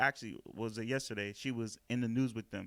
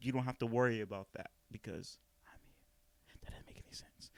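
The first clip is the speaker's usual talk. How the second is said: speaking in a whisper, quieter; 7 dB quieter than usual. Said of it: "And I'm whispering".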